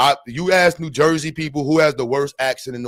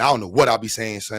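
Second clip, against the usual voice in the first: normal talking voice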